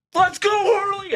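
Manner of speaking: all-out, full-volume screaming, very high-pitched. Recreating how a man sprawled in his seat was yelling, screaming. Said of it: "Can I recreate how it was?".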